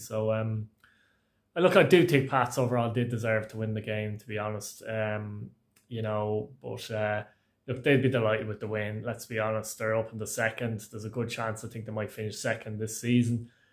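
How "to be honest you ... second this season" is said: unenthusiastic, subdued delivery. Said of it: "if I don't sound very enthusiastic".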